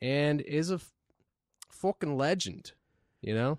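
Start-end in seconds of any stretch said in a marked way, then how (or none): 1.7-2.7 put-on mock Australian accent. Introducing an Australian pro skater guest: put-on Australian accent. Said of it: "it kinda sounds like it from the way you said that".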